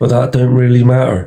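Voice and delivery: Somerset accent on every word. Repeating lines after someone from Somerset to try his accent, imitating a Somerset accent. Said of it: "You nailed it".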